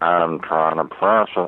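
very slow, deliberate, word-by-word delivery. Retelling a reply to his wife asking for the salt: Morgan Freeman voice. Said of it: "trying to kind of do a Morgan Freeman".

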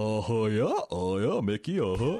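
silly cartoon character voice. Imitating the accent from a movie scene: Goofy voice. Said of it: "He's doing goofy".

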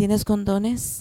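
telenovela-style voice, every S pronounced crisply. Retelling their own reply to him, in a telenovela voice pronouncing every s. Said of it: "Pronouncing all your S's".

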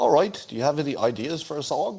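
put-on Liverpool accent. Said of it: "this is my Beatles accent".

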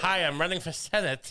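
unconvincing, bad put-on American accent. Mocking an actor's accent in a movie: imitating Ralph Fiennes's American accent. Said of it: "His accent's like".

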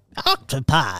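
put-on olde-timey old English voice. Saying a plural word in a put-on voice: old English voice. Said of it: "What was that voice?".

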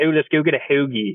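imitated Philadelphia accent. Describing people one town south, the speaker imitates a Philadelphia accent. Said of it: "that weird kind of Philadelphia, Delmarva".

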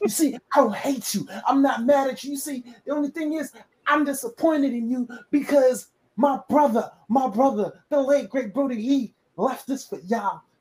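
put-on character voice, taunting, calling out. Imitating a wrestler taking over a faction: Bray Wyatt impression. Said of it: "I'm gonna do my Bray Wyatt impression".

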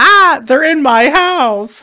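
very high, loud, frantic, panicked goblin shriek. Retelling a movie scene where rocks break into a goblin's house: imitating a panicked goblin scream. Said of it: "and he screams".

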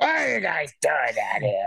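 swooping, creaky, rough janitor voice with swinging pitch. Imitating the janitor's voice when he's first in: William Sadler's janitor. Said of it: "his voice when, when he's first in".

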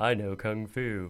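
dumb, dopey, dim movie-star voice. Asked to say something dumb as in an early movie, do a dumb Keanu Reeves impression. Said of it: "say something dumb like Keanu Reeves would".

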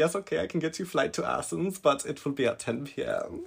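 put-on German accent. Retelling the help center girl's offer of a late flight: German accent. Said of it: "Was that German?".

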